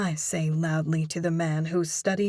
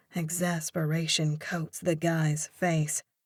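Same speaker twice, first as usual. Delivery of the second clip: ordinary delivery, nothing marked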